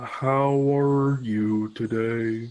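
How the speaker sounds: mournful put-on bee voice. Voicing the bee as it greets everyone, in a sad Mr. Bumblebee voice. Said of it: "You sound sad".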